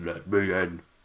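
strained deep voice, dropped low, falling short. Quoting a line mouthed on the Titantron: attempted deep Bray Wyatt voice. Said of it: "I can't do the deep voice".

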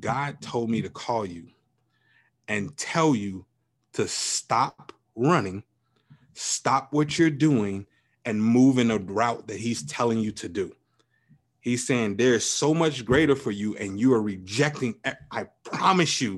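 normal talking voice

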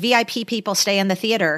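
ordinary delivery

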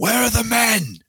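put-on, very high, furious screaming meltdown. Describing a man in a studio losing it as Barcelona trail 4-0, imitating a man screaming. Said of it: "he's just screaming like".

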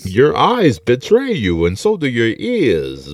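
muffled sinister voice. Joking on mic with friends, doing a Bane voice. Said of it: "doing a fucking Bane voice".

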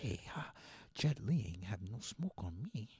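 hushed, breathy, barely voiced whisper. Doing an impression of Jason Statham talking about a fight: Jason Statham impression. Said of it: "that's my impersonation of Jason Statham".

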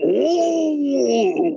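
very high, rough, rasping "oh," drawn out long. Retelling a wrestling interview, answering the interviewer: bad Macho Man impression. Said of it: "the worst Macho Man you ever seen".

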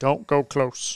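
hushed, breathy, creepy whisper like a horror villain. Speaker slips into horror mode while discussing a movie: Candyman villain voice. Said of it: "You sounded like the guy from Candyman".

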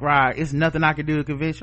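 usual speaking voice

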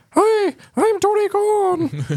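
tiny, very high-pitched, slow little voice. Describing the AEW representative, imitating Tony Khan's high little voice. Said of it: "he's like this high voice little".

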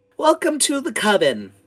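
put-on very high little-girl voice. Voicing a little girl who welcomes the player: little girl character voice. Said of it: "the little girl looks at you and goes".

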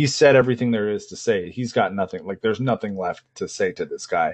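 ordinary delivery

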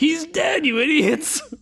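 very high-pitched screaming. Describing a woman yelling at the characters in a movie, imitating someone screaming. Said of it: "like screaming at the people acting on screen".

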